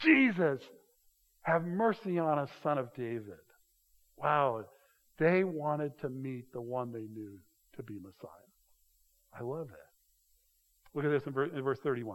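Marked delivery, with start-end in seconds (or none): 0.0-3.4 gentle, mild called-out cry. Speaker acting out people calling to Jesus over a huge crowd, retelling a loud cry. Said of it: "with a loud voice".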